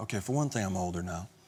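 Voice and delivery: ordinary talk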